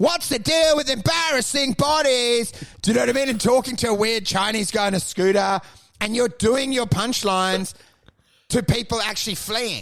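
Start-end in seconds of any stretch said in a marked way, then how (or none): 0.0-2.5 mock, put-on yelling. An interviewer describes the guest doing punchlines to fleeing people, retelling a yell. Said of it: "and you're yelling, going like".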